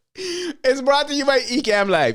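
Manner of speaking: laughing through the words. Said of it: "I can't stop it".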